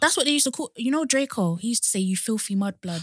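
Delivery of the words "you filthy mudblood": ordinary talk, nothing marked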